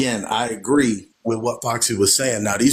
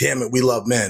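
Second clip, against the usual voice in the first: put-on angry voice. Imitating feminists talking, imitating an angry voice. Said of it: "an anger that you can hear in a lot of their voices".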